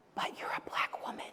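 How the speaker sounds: barely audible, very quiet whisper. Quoting what people would whisper to her, retelling a whisper.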